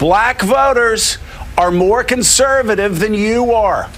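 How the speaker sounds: slow, deliberate delivery, each word set carefully. Addressing Democratic friends in Washington, D.C., saying it slowly. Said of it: "let me say it slowly".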